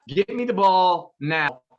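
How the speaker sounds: plain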